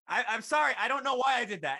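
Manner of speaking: shrill, very loud, high-pitched shout. Retelling a waitress calling an apology across the theater: imitating a waitress shouting. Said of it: "she shouts across the theater".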